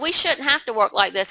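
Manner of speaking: ordinary talk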